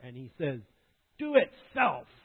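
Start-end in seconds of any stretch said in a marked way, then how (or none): 1.2-2.0 put-on very high-pitched, very loud, defiant toddler yelling. Retelling a two-year-old refusing help: imitating Tim's defiant tone. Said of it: "with this defiant look on his face".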